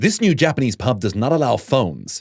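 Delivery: synthetic text-to-speech ai narrator voiceover. Imagining an online video about a Japanese pub, in a TikTok AI voice. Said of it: "a TikTok video with an A I voice going".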